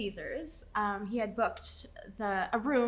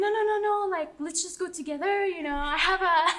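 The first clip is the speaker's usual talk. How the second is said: put-on French accent, pitched up; 8 semitones higher, 6 dB louder than usual. Retelling what a French date suggested at dinner: French accent imitating Baguette. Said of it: "Oh, nice accent".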